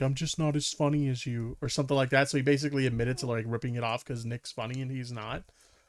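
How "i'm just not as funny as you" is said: mock mournful, dejected, really sad voice. Retelling what someone said to a friend: imitating a really sad voice. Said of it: "in a really sad voice".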